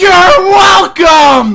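very high, loud, drawn-out yell.

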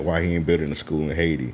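ordinary talk, nothing marked

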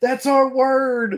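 put-on shrill, very high-pitched screaming shriek. Retelling how the other guy reacted to a word: imitating Michael screaming. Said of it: "he starts screaming".

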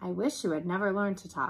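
ordinary delivery, nothing marked

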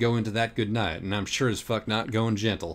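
usual speaking voice

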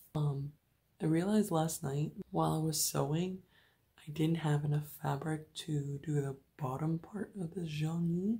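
hushed, quiet, low voice. Talking in the morning while a sister is still asleep, speaking low. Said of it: "So sorry if I'm speaking low".

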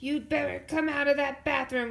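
shouting, pitched high. A brother bangs on the bathroom door at his sister inside; shouting. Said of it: "shouted Brother".

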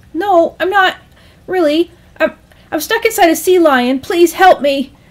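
high, squeaky, desperate, panicked voice. Narrator voices Cal, swallowed by a sea lion, in a squeaky voice. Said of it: "[name] had been swallowed whole by a sea lion. ... His voice came out as a squeak".

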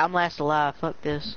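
normal talking voice

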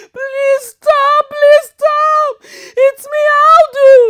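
crying, pleading scream, very high, shrill and loud. Aldo pleads with the people throwing fire at the tree; screaming, crying, pleading. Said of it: "Aldo kept screaming and crying and pleading with the people".

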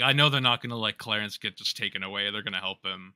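ordinary delivery

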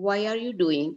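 ordinary delivery

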